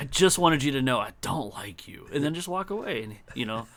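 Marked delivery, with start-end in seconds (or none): none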